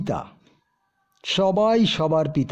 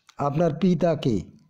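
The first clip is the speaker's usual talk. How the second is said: plain reading voice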